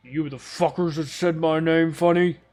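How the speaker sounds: loud, big, hulking orcish brute voice. Voicing an orcish man who answers the door to the party: orcish man voice. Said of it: "seven-foot-tall orcish man stands there".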